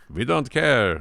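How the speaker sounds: terrible attempted Italian accent, loud and high. Imitating Italians saying they don't care: bad Italian accent. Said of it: "That's not an Italian accent".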